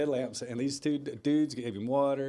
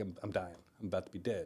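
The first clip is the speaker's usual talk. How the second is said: put-on tearful voice, lower and quieter; 6 semitones lower, 8 dB quieter than usual. Retelling a late-night phone call, imitating a friend crying. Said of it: "and he's crying".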